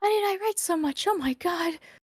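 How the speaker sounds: out of breath. Finishing a long reading aloud, out of breath. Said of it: "Almost out of breath".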